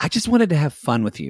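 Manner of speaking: plain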